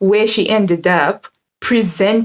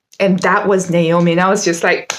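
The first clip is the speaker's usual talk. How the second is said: plain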